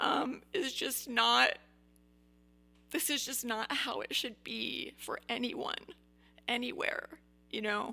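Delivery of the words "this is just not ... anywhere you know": speaking through tears. Speaker talking to listeners, crying, tearful voice. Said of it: "I know I'm crying".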